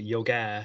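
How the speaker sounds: yoga with final a stressed, Irish accent. Showing how yoga is said in Ireland: Irish 'yoga', stress on final a. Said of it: "Notice the way we say it here in Ireland, ... You got to put emphasis on the a".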